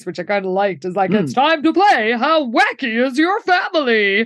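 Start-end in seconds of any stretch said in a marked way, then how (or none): 1.1-4.3 cheesy, hammy fifties radio host announcer voice. Retelling a radio host's game call: cheesy fifties radio host voice. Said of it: "a very cheesy sort of fifties voice".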